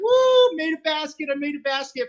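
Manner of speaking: put-on giddy whoop, very high and swooping. Retelling making a first basket on the court; reenacting own excited cheer. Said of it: "I was like".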